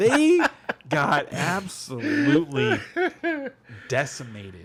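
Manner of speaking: slow, deliberate, high, drawn-out, word-by-word delivery. Repeating a line at the other speaker's request; said slowly. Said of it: "Say it again slowly".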